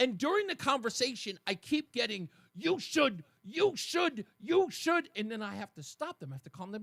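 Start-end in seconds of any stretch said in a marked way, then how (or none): 2.6-5.1 put-on heated, raised, pitched-up, animated, repeated pushing. Retelling a heated conversation about the show: imitating someone raising their voice. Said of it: "the person is raising their voice and getting animated".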